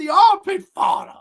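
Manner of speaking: loud voice breaking way up high. Retelling a movie line, imitating a voice crack. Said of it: "his fucking voice cracks".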